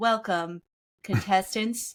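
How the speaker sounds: put-on robotic announcer voice. Retelling how a survival show announced eliminations: imitating a robot announcer voice. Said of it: "a robot voice".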